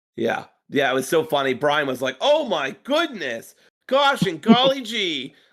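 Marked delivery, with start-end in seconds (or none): 2.2-5.3 slow, high-pitched, amazed exclaiming delivery. Retelling a commentator's reaction to a match: imitating Bryan Danielson exclaiming, Northwestern way. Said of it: "couldn't stop exclaiming in the most, like, w-, Northwestern way possible".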